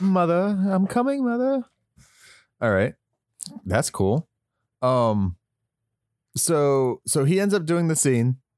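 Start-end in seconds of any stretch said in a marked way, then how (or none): 0.0-1.6 high, obedient, dutiful calling voice. Joking that a movie scene seems very Norman Batesy: Norman Bates voice. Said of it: "Seems very Norman Batesy".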